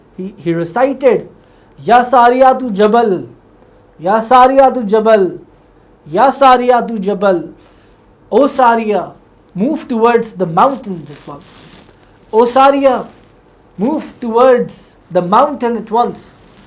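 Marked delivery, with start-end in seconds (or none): none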